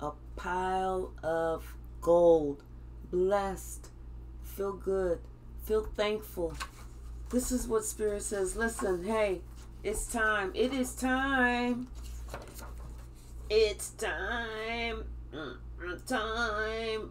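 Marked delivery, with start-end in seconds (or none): 8.6-17.1 slow, time-stretched computerized machine voice. Speaker delivering what Spirit says to viewers, in a computerized voice. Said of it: "And that's my computerized voice".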